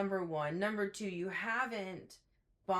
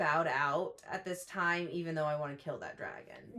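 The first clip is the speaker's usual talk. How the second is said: usual speaking voice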